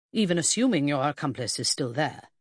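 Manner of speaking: plain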